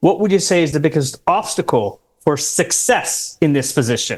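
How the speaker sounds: success hit hard and emphasized. Giving a favorite interview question about obstacles: strong stress on success. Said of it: "Notice the word that I'm emphasizing, success".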